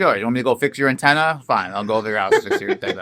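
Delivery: put-on carefree, unbothered, laid-back tone. Describing a movie character who is too carefree: imitating a carefree, unbothered guy. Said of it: "He was too carefree".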